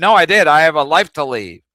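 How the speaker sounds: very loud, livid, furious screaming. Retelling a phone call with a lady at the office: retelling own screaming. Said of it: "I was screaming at her".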